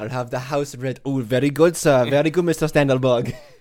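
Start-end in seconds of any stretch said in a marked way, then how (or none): 1.0-3.3 put-on accent mixing Swedish and Indian. Playing a waiter answering a customer, Mr. Standelberg, in a Swedish-Indian accent. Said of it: "He sounds Swedish and Indian at the same time".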